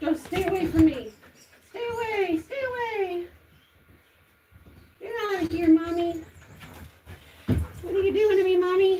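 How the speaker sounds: high animal voice. Voicing what the pet thinks while being wiped: voicing the pet's thoughts. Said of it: "I know he's like".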